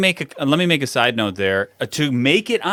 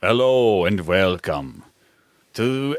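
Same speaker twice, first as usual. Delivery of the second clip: put-on vampire voice, lower pitch; 6 semitones lower than usual. Trying the impersonation on the spot when asked: Dracula impersonation. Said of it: "trying to do a Dracula impersonation".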